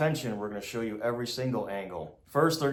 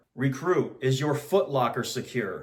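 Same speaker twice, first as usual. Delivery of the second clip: plain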